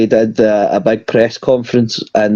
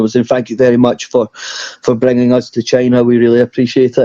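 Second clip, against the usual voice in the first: plain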